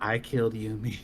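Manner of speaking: whispered speech. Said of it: "What'd you whisper?".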